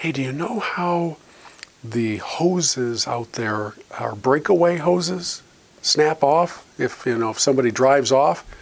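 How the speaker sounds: hushed, confiding, stage half-whispered aside. Retelling asking the young lady about the breakaway hose: retelling a half-whisper. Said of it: "I kinda whispered to her".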